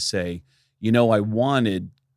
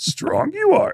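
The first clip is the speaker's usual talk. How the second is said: very high, squeezed-up put-on character voice; 4 dB louder than usual. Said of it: "Yoda doing [name]".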